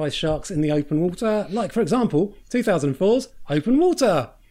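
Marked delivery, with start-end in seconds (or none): 1.5-4.3 bright, upbeat, cheery, pitched-up delivery. Host introducing another shark film as an example, cheery. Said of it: "I said it in such a cheery voice".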